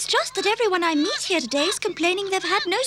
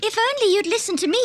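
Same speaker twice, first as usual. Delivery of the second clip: plain reading voice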